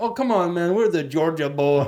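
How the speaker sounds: put-on Eastern European accent. Retelling what a school friend always said to them: imitating an Eastern European accent. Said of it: "in his Eastern European accent".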